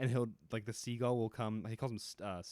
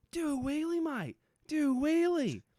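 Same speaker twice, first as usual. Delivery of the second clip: put-on very high, loud, drawn-out Australian accent; 6 dB louder than usual. Retelling what an Australian man shouted: Australian accent. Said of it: "typical insane Australian man".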